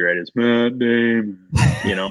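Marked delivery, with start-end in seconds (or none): 0.3-1.4 slow, drawn-out, dopey puppet voice. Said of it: "Matt Damon's only line in that movie".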